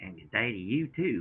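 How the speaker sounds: put-on Australian accent mixed with Southern accent. Returning a greeting: fake aussie southern accent. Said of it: "Me and my fake Aussie Southern accent".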